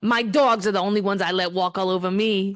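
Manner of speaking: put-on New Jersey accent. Speaker takes their turn delivering their line: best attempt at Jersey accent. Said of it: "in like my best Jersey accent that I can".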